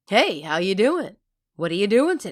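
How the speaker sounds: put-on voice of an older man. Showing what her dad really sounds like: imitating Jeff Hammer. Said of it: "what's he sound like?".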